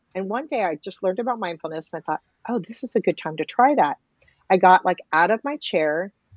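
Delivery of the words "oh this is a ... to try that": ordinary delivery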